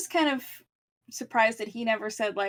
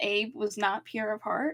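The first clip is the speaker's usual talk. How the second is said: normal talking voice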